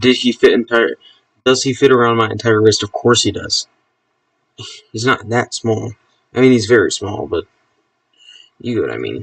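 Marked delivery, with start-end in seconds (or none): none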